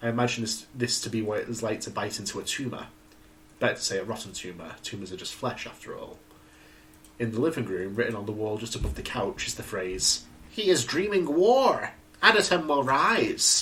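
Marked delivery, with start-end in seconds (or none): 10.5-13.6 high, loud, hammed-up cartoon villain voice. Narrating a horror story, reading a phrase written on a living-room wall; reading like Skeletor. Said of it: "Why'd you read that like Skeletor?".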